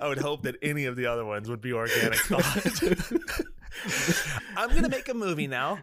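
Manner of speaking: high, laughing mock voice, laughing it out.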